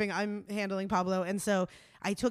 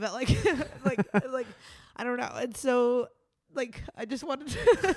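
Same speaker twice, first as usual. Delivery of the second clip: crying, tearful, halting, voice breaking; 4 semitones higher, 4 dB louder than usual. Recalling being with him till the very end, the speaker talks while crying. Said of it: "I'm totally crying".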